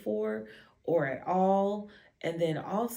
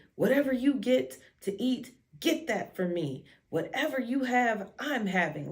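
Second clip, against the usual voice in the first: disrespectful, slick, rude tone, pitched up; 5 semitones higher than usual. Retelling what a partner said on the phone: imitating someone talking disrespectfully. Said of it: "talking really disrespectful to me".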